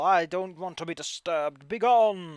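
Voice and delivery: sudden character yell. Voicing an unseen figure warning intruders away: character yelling. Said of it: "you suddenly hear someone yell".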